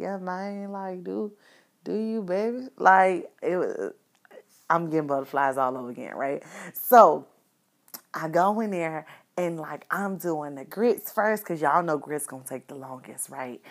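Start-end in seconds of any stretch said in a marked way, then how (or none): 0.0-2.7 easygoing cool-guy voice, slow, soft drawl. Speaker repeats how he talks to her, imitating a laid-back guy. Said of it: "like how he talks to me".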